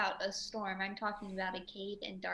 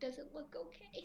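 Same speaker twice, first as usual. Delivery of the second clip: very quiet, high, under-the-breath half-whisper; 7 semitones higher, 12 dB quieter than usual. Narrating a scene, asking a question under the breath: half-whispered. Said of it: "and I whispered".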